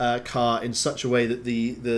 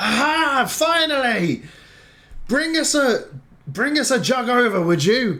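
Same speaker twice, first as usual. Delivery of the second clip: high, loud, drawn-out calling out; 12 semitones higher, 5 dB louder than usual. Voicing a character who calls out for a jug. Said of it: "you hear one of them call out".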